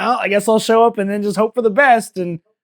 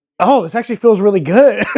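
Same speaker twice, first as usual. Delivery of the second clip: mock pleased surprise, man's voice, louder; 4 dB louder than usual. Responding to another's story, imitating a pleasantly surprised man. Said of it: "he was going to reach into the rice and go".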